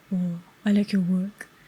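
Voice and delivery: put-on deep monotone. Retelling a stranger who approached, imitating a deep monotonous voice. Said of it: "His voice was very deep and was very monotonous".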